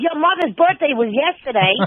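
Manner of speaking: shrieking, very high-pitched, shrill holler. Retelling a call heard on the radio at home: retelling own yell. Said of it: "In my house, I'm yelling".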